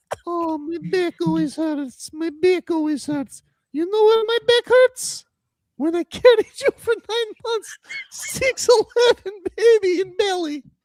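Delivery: very high, complaining, put-upon mom voice. Speaker talks about a player and does an impression of his mother. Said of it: "my impression of your mother".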